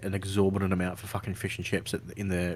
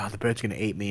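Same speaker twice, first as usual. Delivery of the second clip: ordinary talk, nothing marked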